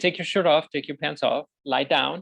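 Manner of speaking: ordinary talk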